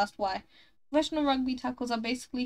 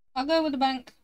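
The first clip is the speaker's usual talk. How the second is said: rushed, rattled off far too quick, raised voice; 3 semitones higher, 6 dB louder than usual. Picking an answer out loud, said way too fast. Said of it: "I said that way too fast".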